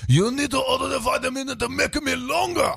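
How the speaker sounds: shrill, gravelly irate voice.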